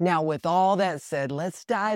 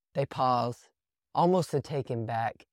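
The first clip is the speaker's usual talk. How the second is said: ordinary talk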